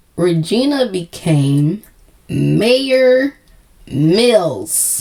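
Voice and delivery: slowly spoken. A video host retelling a show's plot tries the sentence again, saying it slowly. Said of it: "let's say it slow".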